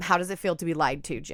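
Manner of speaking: plain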